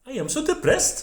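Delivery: Norwegian rising-at-the-end intonation on "depressed". Comparing languages, demonstrating Norwegian: Norwegian rising-at-the-end intonation. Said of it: "always goes up at the end".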